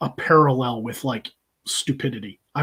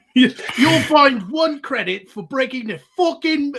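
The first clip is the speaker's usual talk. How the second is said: put-on British accent, much higher; 12 semitones higher, 4 dB louder than usual. Quoting a Star Trek line, the speaker tries a put-on British accent. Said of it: "You should be able to do that British voice better than mine".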